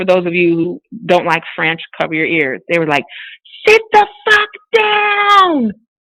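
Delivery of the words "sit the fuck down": very high screaming, dragged out long. Speaker retells people at a convention screaming at their group, retelling a scream. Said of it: "they were screaming at us".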